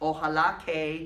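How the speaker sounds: ordinary talk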